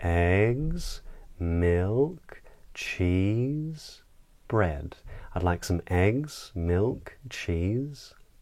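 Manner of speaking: each of eggs, milk, cheese rising. Demonstrating how to say a list of items, rising list intonation. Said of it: "a rising inflection".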